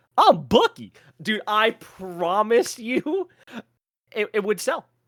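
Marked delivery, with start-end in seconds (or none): 0.1-0.9 loud, high, belted-out mascot voice. Pitching a voice for the mascot Bucky the Beaver: Bucky the Beaver voice. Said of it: "he needs that voice".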